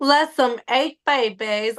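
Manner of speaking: fast, rattled-off put-on Southern accent. Giving a hint in a word game, saying the phrase in a fast southern accent. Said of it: "try to say it with a southern accent, but say it fast".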